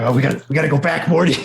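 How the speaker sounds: put-on mad scientist voice. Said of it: "the weird, crazy Doc Brown of demon princes".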